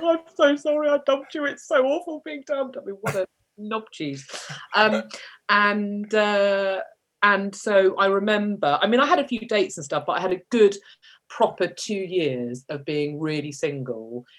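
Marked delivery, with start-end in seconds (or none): 0.0-2.7 high, tearful voice. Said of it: "I was in tears going".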